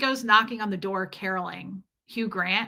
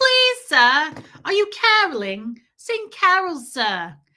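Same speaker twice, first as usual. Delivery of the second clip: put-on high, sing-song, animated little girl voice; 7 semitones higher, 7 dB louder than usual. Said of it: "Reese is amazing at accents".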